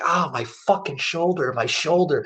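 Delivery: play-acted, held-back, mild wail of pain. Recounting hurting their shoulder in public, retelling screaming in pain. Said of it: "I'm screaming in pain".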